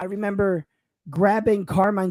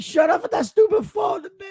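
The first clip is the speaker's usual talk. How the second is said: mock-scolding put-on voice, much higher pitch; 13 semitones higher, 4 dB louder than usual. Retelling how his father told him off over his phone, imitating a scolding dad. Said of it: "Here's my dad".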